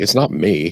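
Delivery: huffy, put-out, irritated, pissy tone. Retelling how a newcomer to the panel reacts: imitating someone getting pissy. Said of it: "kinda get pissy and be like".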